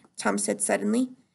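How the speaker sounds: usual speaking voice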